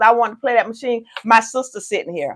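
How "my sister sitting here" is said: mock curt, snippy, sassy tone with attitude. Retelling a girl's reply about a saved casino machine: imitating someone's attitude. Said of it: "she said it with an attitude too".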